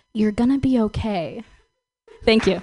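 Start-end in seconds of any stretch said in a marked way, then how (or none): 0.1-1.4 whispering. Retelling what her dad whispered in her ear during a hug, retelling a whisper. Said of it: "he whispers in my ear".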